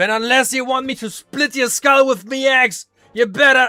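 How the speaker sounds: talking like a pirate. Threatening to split someone's skull with an axe: talking like a pirate. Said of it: "Why is he talking like a fucking pirate?".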